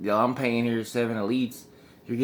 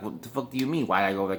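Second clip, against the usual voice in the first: rude, obnoxious, crass delivery; 3 semitones lower, 4 dB quieter than usual. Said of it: "just an assholey voice".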